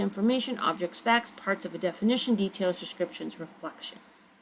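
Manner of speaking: rapid, rattled-off, one after another. Demonstrating a comma-only list in a sentence, list read quickly. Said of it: "I really sped up my reading of the list".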